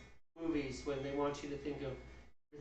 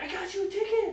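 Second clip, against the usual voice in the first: put-on very high, loud, excited delivery; 7 dB louder than usual. Retelling how a friend announced she bought a ticket: imitating someone excited. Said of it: "she was all excited".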